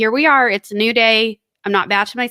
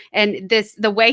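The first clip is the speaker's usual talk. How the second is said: normal talking voice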